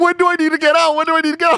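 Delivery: mock very high, frantic, repeated panicked screaming. Retelling what a woman screamed at the speaker, retelling her screaming. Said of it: "she starts screaming at me".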